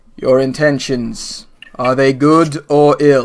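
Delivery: deep, booming voice. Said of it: "a second similar voice says".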